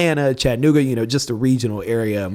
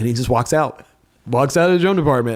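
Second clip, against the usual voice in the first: plain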